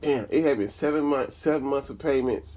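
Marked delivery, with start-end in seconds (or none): none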